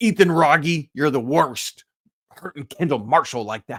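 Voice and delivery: silly, dopey, goofy put-on voice. Recalling a past Carolina team, the host calls someone out: dumb silly voice. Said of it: "the dumb voice I just did".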